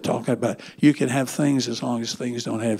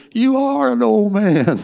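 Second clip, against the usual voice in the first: very shrill, very high, very loud drawn-out shout; 10 semitones higher, 8 dB louder than usual. Retelling his wife's shouted reply from across the dining room: imitating Mary Ann shouting back. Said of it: "She shouted back and said".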